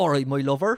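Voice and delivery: West Country way of talking. Repeating a phrase from an accent video: imitating a West Country accent. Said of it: "a kind of uncle that speaks like this".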